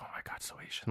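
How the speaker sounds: muttering under the breath. Retelling a scene, quoting what he said: imitating muttering under his breath. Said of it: "under his breath".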